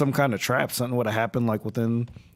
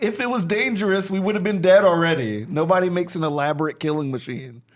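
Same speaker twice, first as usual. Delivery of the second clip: acted, pitched-up mild yell; 5 semitones higher than usual. Speaking in character during the game, yelling at another player's character. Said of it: "I'm like yelling at Celise".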